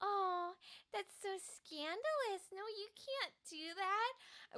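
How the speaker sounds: mock-innocent, all sweet, protesting voice. Acting out Juliet's replies to Romeo: doe-eyed Juliet voice. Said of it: "the big doe eyes".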